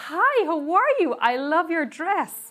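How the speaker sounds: phony-friendly, vaguely American put-on accent. Retelling greeting a woman on camera after she ignored the speaker, put-on American-style accent. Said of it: "obviously not an American accent".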